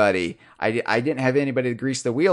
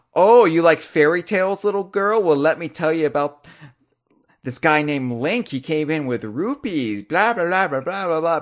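mock patronizing, condescending, talking-down voice; 4 semitones higher than usual. Imitating a game character talking down to a little girl: condescending Bazaar Bear voice. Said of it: "talking down to Dixie Kong".

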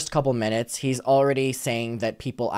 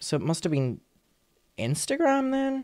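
voice cracks up very high; 11 semitones higher, 5 dB quieter than usual. Speaker trying to recall where a message came from, voice cracking. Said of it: "Why did my voice just crack there?".

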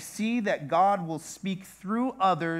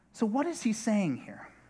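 normal talking voice

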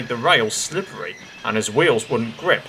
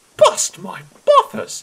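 very high, loud, sudden cry; 5 dB louder than usual. An engine is shown himself in a mirror and is exclaiming. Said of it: "he exclaimed".

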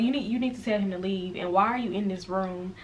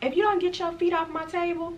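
very high-pitched motherly scolding voice; 10 semitones higher than usual. Retelling her mama's words to a boy, in a very high-pitched voice. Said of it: "but like very high pitched voice".

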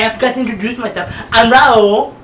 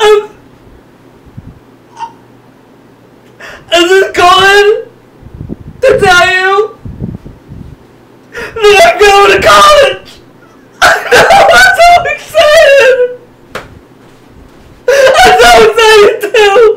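put-on choked-up crying, higher and louder; 11 semitones higher, 7 dB louder than usual. Acting out a character calling his dad with big news: acting tearfully emotional on phone. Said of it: "very emotional when he talks to his father".

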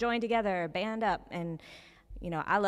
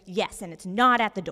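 put-on irate ranting voice, louder; 8 dB louder than usual. Retelling a phone call from a customer: imitating an irate woman. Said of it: "a very irate, angry woman".

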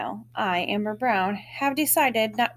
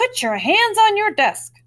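very high-pitched, loud yell; 11 semitones higher, 8 dB louder than usual. A teacher, after boys play karate, addresses the whole class: yelled. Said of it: "she makes everyone sit down and then yells".

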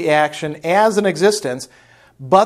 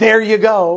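belittling, demeaning, condescending tone; 4 semitones higher, 4 dB louder than usual. Acting out handing something to the neighbors, acting out a demeaning 'there you go'. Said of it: "I say it in kind of a demeaning way".

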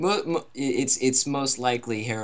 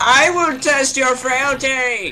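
very high, booming, slow, drawn-out bellow; 14 semitones higher, 9 dB louder than usual. Voicing a game boss taunting: Herobrine voice. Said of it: "That is what Herobrine sounds like".

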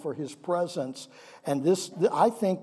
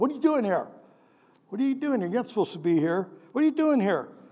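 high-pitched, scolding voice; 5 semitones higher than usual. Reading a Bible question as the speaker imagines their mom asking it, imitating mom scolding. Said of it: "I just kind of imagined my mom saying that".

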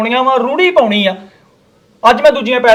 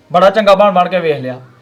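ordinary delivery

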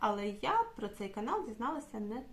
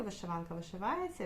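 ordinary talk, nothing marked

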